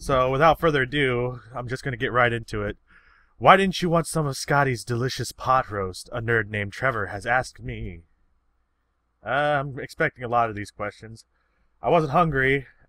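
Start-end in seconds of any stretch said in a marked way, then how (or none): none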